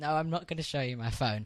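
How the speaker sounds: hushed, quiet, very low voice. Retelling what was said to a man wanting the phone: retelling own words in very low voice. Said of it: "I said in a very low voice".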